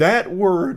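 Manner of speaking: high voice with big crack mid-phrase. Speaker talking about a word she used, voice cracking. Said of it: "I had a big voice crack there".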